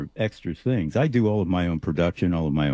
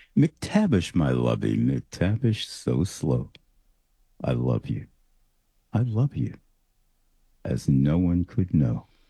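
seductive, low, sultry delivery; 4 semitones lower than usual. Asked to read aloud the poem they wrote, in a sultry voice. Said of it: "that sultry voice of yours".

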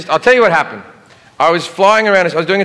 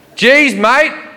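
higher, polite but very sarcastic. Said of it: "very politely but extraordinarily sarcastically".

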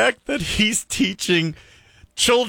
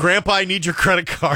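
normal talking voice

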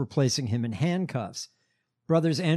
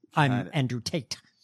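put-on over-articulated half-British, half-American accent, every word enunciated; 2 semitones lower than usual. Imitating Andrew Tate's weird accent: Andrew Tate impression, over-articulating. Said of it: "he over articulates like this".

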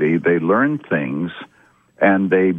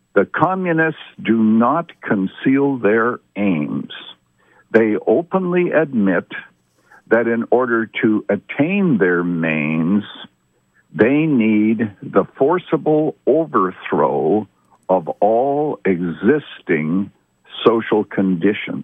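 slow, deliberate reading; 2 semitones higher than usual. Speaker reads a manifesto passage aloud so people grasp it, reading slowly. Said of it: "I'm saying that slowly".

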